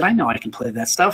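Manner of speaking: ordinary talk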